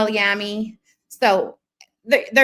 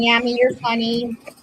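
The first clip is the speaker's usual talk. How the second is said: usual speaking voice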